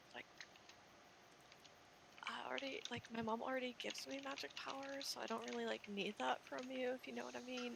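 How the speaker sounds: soft, hushed half-whisper under the breath. Speaker answers it back, half-whispering. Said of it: "I'm I'm whispering".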